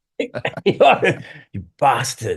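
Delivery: slow, bad, terrible put-on Australian accent. Answering the interviewer's teasing jokingly: terrible australian accent. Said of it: "That's my terrible Australian accent".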